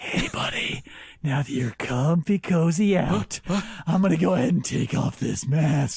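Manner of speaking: slow, hushed whisper right into the ear. Acting out what he says into your ear while you're asleep: whispering into your ear. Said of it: "he like whispers into your ear".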